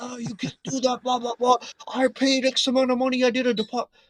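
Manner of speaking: furious ranting outburst, voice very high. Retelling how a customer started losing it: imitating a man losing it. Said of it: "this guy starts losing it".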